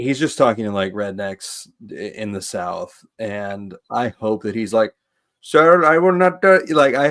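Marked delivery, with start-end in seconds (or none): 5.4-6.5 put-on Indian accent, higher and louder. Imagining a friend answering rednecks in the south: put-on indian accent. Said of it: "an Indian accent".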